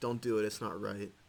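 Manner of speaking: ordinary talk, nothing marked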